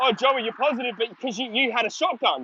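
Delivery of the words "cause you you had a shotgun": ordinary talk, nothing marked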